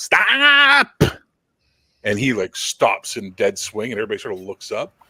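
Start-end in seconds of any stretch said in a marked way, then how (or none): 0.0-1.0 very high, stretched-out woman's shout. Voicing a woman calling from the back of the hall: female voice shouting stop. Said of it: "female voice go".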